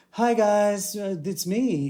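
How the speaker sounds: small put-on voice, high, slow, very drawn out. Describing voicing a homebrewed boss as the players arrive: little put-on voice. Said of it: "I just put on like a little voice".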